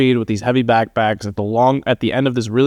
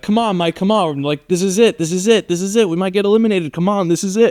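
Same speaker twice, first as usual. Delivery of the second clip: high, pitched-up yell; 8 semitones higher than usual. Retelling a teammate urging him on during a race: imitating Nick yelling. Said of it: "yelling at me".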